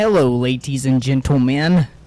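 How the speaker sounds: deliberately botched, really bad clown-villain character voice. Podcast host opening an episode, really bad Joker impression. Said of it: "really bad Joker impression".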